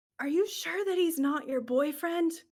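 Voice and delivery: put-on loud, high child-like stage whisper. Voicing a child asking about a boyfriend: loud kid stage whisper. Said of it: "whispers, you know that, like, super loud, like, kid trying to whisper".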